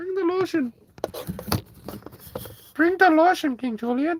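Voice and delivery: very high, squeaky little cartoon-critter voice. On a live stream as the phone falls, doing a little Madagascar sidekick voice. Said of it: "Sorry, I won't do that voice again".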